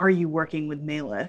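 close, leaning-in, pointed voice. Leaning in close to question a struggling captive, speaking quietly. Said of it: "I'm going to really lean in really quietly".

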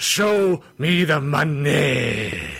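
very slow, drawn-out delivery, lingering on money. Quoting a movie line as a wrestling promoter: Vince McMahon impersonation. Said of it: "I have to try to do my Vince McMahon impersonation".

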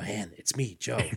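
hushed, theatrical stage whisper. Retelling a tv scene where a disguised man reveals himself, in a stage whisper. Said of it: "he stage whispers".

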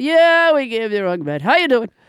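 casual, breezy, offhand doctor-like tone. Retelling the doctor's weekend call about the wrong medicine: imitating a casual-sounding doctor. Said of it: "she sounded very casual about it".

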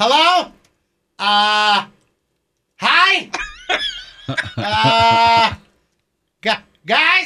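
very slow, swooping, bewildered calling with long uh. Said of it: "You go".

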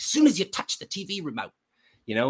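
put-on Australian accent. Retelling what a man said while grabbing a coffee mug, in an Australian accent. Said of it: "in his Australian accent".

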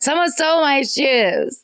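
put-on tipsy yelling, toned down. Reading out a story where an aunt yells about her shoes: imitating an aunt yelling. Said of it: "I heard my aunt yell, this is in all caps".

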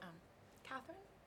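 small, faint, tiny whispered little voice. Retelling standing in line and hearing someone say catherine, tiny little voice. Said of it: "I hear this tiny little voice go".

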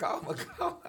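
acted desperate pleading. Recounting being ordered out of a car, retelling a desperate plea. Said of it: "falava calma desesperado".

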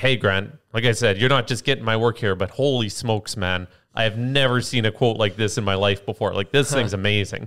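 usual speaking voice

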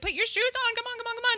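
very high-pitched, singsong nagging voice.

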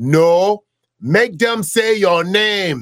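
put-on Nigerian accent. Quoting a father's reply to a childhood request, in a thick Nigerian accent. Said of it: "with his thick Nigerian accent".

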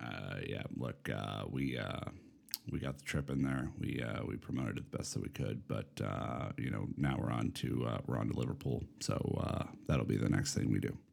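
very low, creaky, raspy character voice. Imitating a coach's press conference after being told to: Bill Belichick impression. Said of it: "You gotta do your Belichick instead".

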